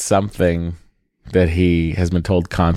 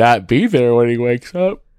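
high-pitched speech through a yawn; 5 semitones higher than usual. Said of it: "I'm sorry for yawning".

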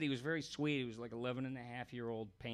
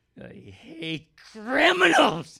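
put-on screaming voice, higher and louder; 13 semitones higher, 19 dB louder than usual. Retelling how a cartoon character screamed, in a Kirk Douglas voice. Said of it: "he would scream like, uh, Kirk Douglas".

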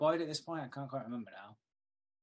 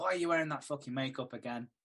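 plain

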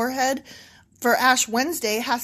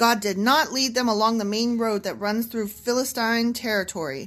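usual speaking voice

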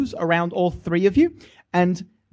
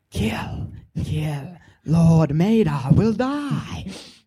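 whispering close up, right into the ear; 4 semitones lower than usual. Game master voicing a whisper a player hears as if from behind, whispering into their ear. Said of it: "whispering into your ear".

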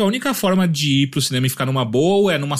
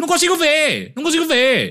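put-on high, swooping yell in an old woman voice; 13 semitones higher than usual. Retelling an old woman yelling in the cinema: imitating an old woman yelling. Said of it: "E ela ficava gritando".

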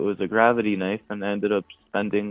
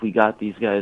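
put-on, mock-excited, worked-up voice. Retelling what the police said after getting one guy's name, imitating someone excited. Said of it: "like all excited going like".

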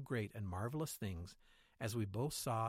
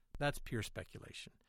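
usual speaking voice

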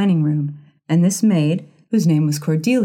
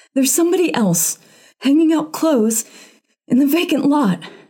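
breathless, gasping, very high-pitched; 9 semitones higher than usual. Narrating a woman's news to Mrs. Townsend; gasped out. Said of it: "she gasped".

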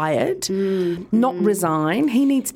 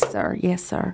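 put-on West Virginia accent, slower pace; 4 dB quieter than usual. Showing another speaker how Clarice from Silence of the Lambs talks, in Clarice's West Virginia accent. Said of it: "She talks. Like this".

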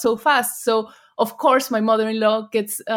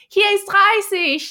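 put-on excited little girl shout; 9 semitones higher than usual. Describing the daughter yelling at a speeding car, imitating her shout. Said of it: "she starts shouting".

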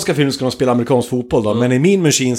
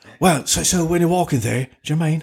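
hissed, quieter put-on English voice; 3 semitones higher, 5 dB quieter than usual. Showing how to imitate Jason Statham, the speaker hisses every word: hissing Jason Statham impression. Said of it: "Då ska du väsa lite i allt du säger".

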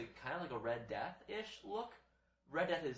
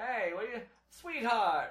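very loud, pitched-up comic-book villain voice; 9 semitones higher, 9 dB louder than usual. Describing a movie trailer, imitating how the Penguin talks: Penguin voice. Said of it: "the way Penguin talks".

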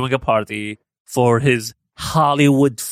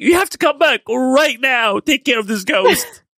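put-on screaming, way up high, very high pitch; 13 semitones higher than usual. Retelling a ghost kid on the phone to his mom, retelling a kid's screaming. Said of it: "And he's screaming".

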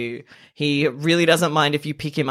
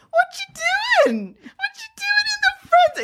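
very high, swooping sing-song voice. Retelling a video of their mum talking to the pet, imitating pet-talk voice. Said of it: "The voice that you use when you talk to your pet".

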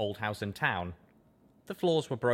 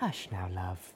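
gentle, soft, hushed cooing; 3 semitones lower, 5 dB quieter than usual. Narrator voicing a character soothing a crying friend; cooing. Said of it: "Velvet cooed".

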